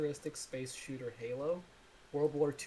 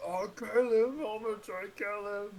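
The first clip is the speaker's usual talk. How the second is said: loud, high-pitched, shouted put-on Irish accent; 8 semitones higher, 7 dB louder than usual. Describing masked enemies from planet Helga and how they talk: Irish accent. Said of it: "they talk in Irish accents".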